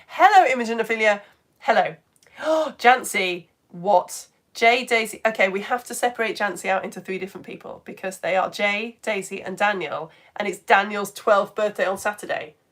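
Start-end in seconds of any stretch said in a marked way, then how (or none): 0.1-1.9 loud, eager, excited voice. Greeting people by name despite a sore throat, excited voice. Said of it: "I'm still doing excited voice".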